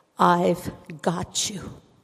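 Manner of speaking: tender, gentle, loving, comforting voice. Retelling how the Lord spoke to them that night, a soft, gentle, loving voice. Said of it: "in a very soft and gentle, loving voice".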